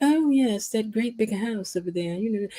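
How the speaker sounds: acted snooty, condescending, looking-down-on-you voice. Retelling how snobs downplayed a woman's house: imitating a snobbish woman. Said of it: "these snobs was talking to her and they started trying to downplay her house".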